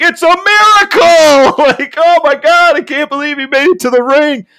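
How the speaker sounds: high exclaiming call. Retelling a wrestler's wheelchair entrance to the ring, imitating Tony Schiavone. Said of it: "Tony Schiavone just being like".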